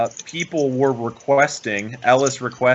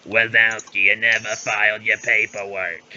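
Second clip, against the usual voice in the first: put-on voice of a very old slug; 3 semitones lower than usual. Quoting the old slug character who scolds Mike Wazowski: Roz from Monsters, Inc. voice. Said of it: "the very old slug that always looks at Mike Wazowski and goes".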